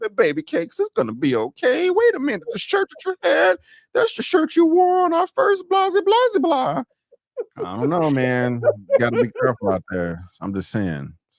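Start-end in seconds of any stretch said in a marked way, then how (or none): 0.2-6.8 put-on very high, sing-song woman's voice. Acting out a woman's words for a listener, in a put-on woman's voice. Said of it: "I cannot stand your woman voice".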